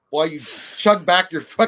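ordinary delivery

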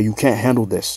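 plain

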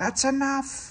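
hissed words. Percy the engine, sliding on slippery rails, hissing. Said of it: "he hissed".

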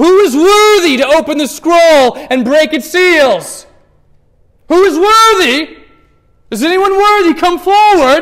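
booming, very loud, slow, drawn-out proclaiming voice. Reading an angel's call to the universe: loud proclaiming voice. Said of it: "proclaiming with a loud voice".

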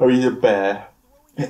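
talking through a yawn. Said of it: "I'm yawning now".

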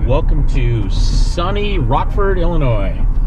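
slow, drawn-out sarcastic delivery.

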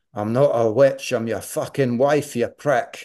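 put-on very broad Scottish accent, laid on thick. Retelling what his wife answered him, in a broad Scottish accent. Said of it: "she said in a very broad Scottish accent".

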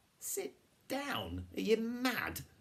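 very high, too-shrill, swooping, full of disbelief. Jonathan reacts as Flavia tells friends to sit while wild dogs approach, a bit too shrill. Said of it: "Jonathan's voice was a bit too shrill".

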